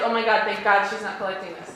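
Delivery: normal talking voice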